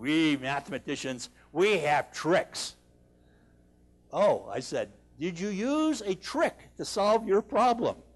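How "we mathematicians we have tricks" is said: put-on deep, low Russian accent. Retelling the mathematicians' reply to his question, in a deep Russian-accent voice. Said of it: "deep voice".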